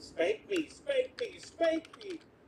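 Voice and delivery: put-on shrill, high, drawn-out, rising child's scream. Retelling how they screamed at their mom at the front door: imitating a childhood scream. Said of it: "screaming at my mom".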